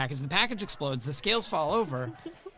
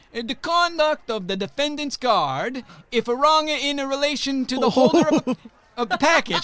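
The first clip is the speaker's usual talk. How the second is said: very loud, slow, booming, high-pitched judge voice; 9 semitones higher, 8 dB louder than usual. Reading a passage from a court opinion in a Justice Cardozo voice. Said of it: "so I'll read it in a Cardozo voice".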